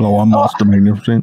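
deep put-on voice. Suggesting to Moss a new voice for next time, deeper Moss voice. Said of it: "Maybe like a deeper voice".

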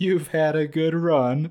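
slow, loud, laughing through the words. Retelling how a man repeated his words back to him, retelling a laughing reply. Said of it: "He looks at me and he busts out laughing".

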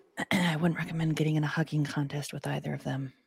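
soft, quiet side comment. A player's character speaks as an aside to Asher and Tanzanite, quietly. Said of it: "I just kind of quietly say".

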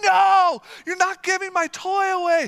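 put-on very high, loud shriek, "no" drawn out. Father retelling his daughter's reaction to her toy being donated, imitating her screaming. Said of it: "one of my daughters just starts screaming at me like".

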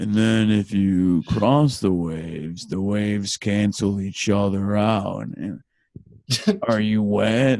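sounds like a surfer dude. Alan answers the other speaker's teasing, sounding like a surfer. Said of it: "You sound like a surfer when you say it".

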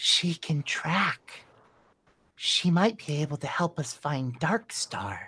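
in a hushed whisper. Narrator voicing Caster as he looks over and speaks, whispering. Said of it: "Caster looks over and whispers".

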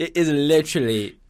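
loud, clumsy attempt at an English accent. Joking about football being called football: bad English accent. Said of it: "I can't even do a good English accent".

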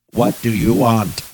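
very loud, eerie, creepy robot voice. Acting out an encounter, the speaker voices the being's question in a creepy robotic voice. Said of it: "in a creepy robotic voice says".

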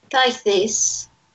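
vaguely upper-class posh British accent. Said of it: "vaguely upper British".

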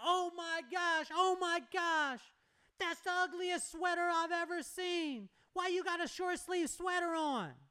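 put-on loud, very high, shrill, drawn-out girl's yell. Retelling how a girl on campus mocked his sweater: imitating a girl yelling. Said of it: "Starts yelling out".

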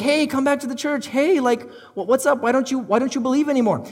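put-on coaxing pleading. The speaker acts out pleading with someone who stopped believing. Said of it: "pleading like".

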